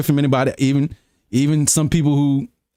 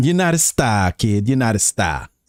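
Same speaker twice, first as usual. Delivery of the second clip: put-on Boston accent, much lower; 3 semitones lower than usual. Someone showing how to sound like you're from boston, in a boston accent. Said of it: "how you sound like you're from Boston".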